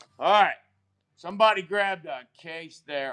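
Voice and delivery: full-on loud screaming shout. Announcing that somebody grabbed a case: screaming. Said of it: "I'm screaming again".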